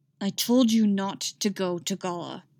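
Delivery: through clenched teeth. Narrator reads a man's reply to a woman, said through clenched teeth. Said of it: "he said through clenched teeth".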